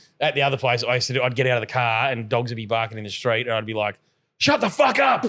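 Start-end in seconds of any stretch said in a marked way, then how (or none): 4.4-5.3 mock very high, all-out shouted yell. Retelling shouting at barking dogs in the street: reenacted yell. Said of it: "I'm obviously shouting".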